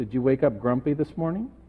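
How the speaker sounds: mock, very sugary-sweet voice. Retelling a question asked one early morning: imitating a very sweet voice. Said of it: "in a very sweet voice".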